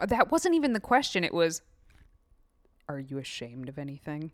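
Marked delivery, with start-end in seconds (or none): 2.9-4.3 quiet, deep male voice. Correcting the other speaker by quoting the man's question, imitating the man's voice. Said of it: "You're saying it in the man's voice".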